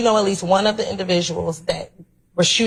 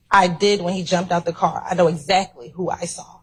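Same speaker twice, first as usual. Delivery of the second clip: ordinary delivery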